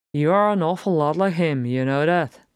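ordinary talk

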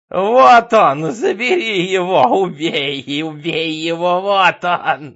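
piercing, shrill, very loud madman's screeching shriek. A madman cries out during a struggle, in a shrill screech. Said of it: "под пронзительное верещание безумца".

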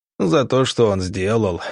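plain

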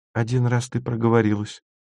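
mild and soft. Masha reminds Stasya, gently. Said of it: "мягко напомнила Маша".

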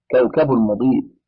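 ordinary delivery

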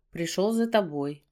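plain

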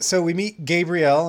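ordinary talk

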